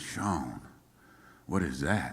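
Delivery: put-on Low Country South Carolina accent. Retelling what a songwriting partner said, imitating Chuck's low country South Carolina accent. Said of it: "low country South Carolina accent".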